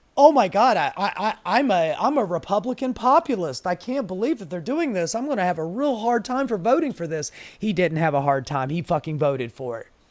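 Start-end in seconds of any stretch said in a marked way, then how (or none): 0.2-7.3 halting, stumbling politician voice, first few words stammered. Mocking a senator's worries about a bill: imitating Josh Hawley. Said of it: "Josh Hawley going".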